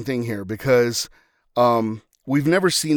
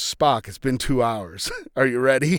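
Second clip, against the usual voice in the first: casual, unbothered, nonchalant delivery, acted out. Retelling a film scene where Kirk flips his communicator open: imitating Kirk's nonchalant line. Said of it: "very nonchalantly just goes".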